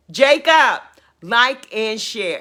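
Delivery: calling out, projected to carry. Calling out on the program to the technical person Jacob, who left the room, yelling. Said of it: "excuse me for yelling".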